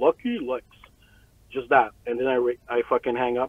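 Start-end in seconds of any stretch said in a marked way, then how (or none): 0.0-0.6 weird put-on voice, blurted out suddenly. Retelling recording a voicemail greeting: imitating own whack voice. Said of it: "I blur out in this whack voice".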